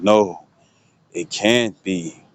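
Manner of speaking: put-on drawn-out, very slow, spooky dramatic scary voice. Retelling what someone said during a tuning exam, in a scary voice. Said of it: "It was in a scary voice and stuff".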